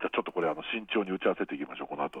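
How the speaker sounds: soft, hushed, confiding voice. Suggesting a careful follow-up meeting after this: speaking quietly. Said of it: "小声になってるんですか".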